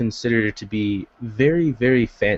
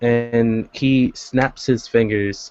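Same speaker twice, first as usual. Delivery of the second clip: plain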